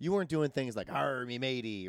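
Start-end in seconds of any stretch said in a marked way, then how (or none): 0.9-1.9 put-on stock stage-pirate voice. Joking about writing a pirate movie: put-on pirate voice. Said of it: "an adventure movie about pirates".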